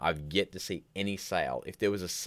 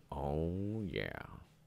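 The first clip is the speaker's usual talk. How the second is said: imitated groggy, just-woke-up morning voice; 7 dB quieter than usual. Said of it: "This is my Morgan Freeman voice".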